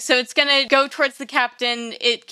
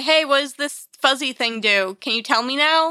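normal talking voice

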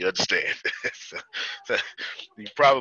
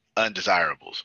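ordinary delivery

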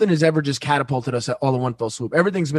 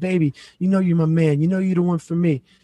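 mock crying voice, pleading tone; 2 semitones higher than usual. Retelling a man's meeting with his side chick at a coffee shop, imitating someone crying. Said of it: "she's crying".

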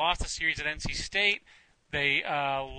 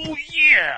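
bad, shrill, very loud, high belted holler; 11 semitones higher, 9 dB louder than usual. Imitating a fan who cheers on the team: bad Macho Man Randy Savage impression. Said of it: "a pretty bad Macho Man Savage".

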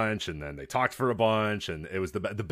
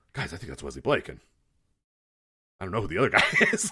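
dramatic commentator voice, big-moment intensity; 2 semitones lower than usual. Retelling Ian Riccaboni's reaction to two guys coming out: hushed tones. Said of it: "he was doing a hushed tones".

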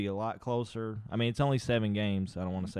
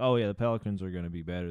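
put-on joking tone, much lower and faster; 2 semitones lower than usual. Speaker recalling what they would say back then, retelling a joking remark. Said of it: "I would say that jokingly".

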